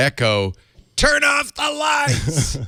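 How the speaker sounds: very high, slow, drawn-out, rising yell. Retelling a bedtime command to a smart speaker: imitating a shout. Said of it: "I shout".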